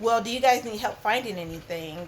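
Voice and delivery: normal talking voice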